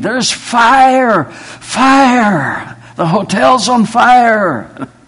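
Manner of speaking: very high, very slow, drawn-out alarmed scream. Telling how a woman burst into the room shouting about a fire: retelling her scream. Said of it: "She's screaming".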